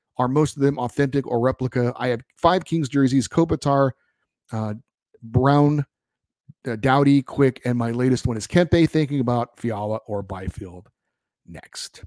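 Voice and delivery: ordinary delivery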